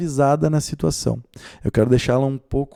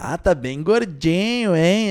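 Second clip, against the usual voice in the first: irritating, snide, mocking, needling tone, drawn out; 4 semitones higher than usual. Showing how to say something to someone in an irritating mocking tone. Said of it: "num tonzinho. Tonzinho meio irritante".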